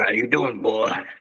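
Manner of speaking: put-on creaky elderly man's voice. Joking around, greeting someone in an old man voice. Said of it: "that's the old man voice".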